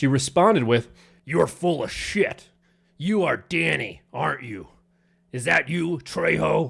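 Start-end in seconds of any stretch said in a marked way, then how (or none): 1.2-6.7 creaky, slow, rough, frightening woman's voice. Retelling an angry stranger's accusation: imitating a scary woman's voice. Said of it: "I don't know where this fucking voice came from".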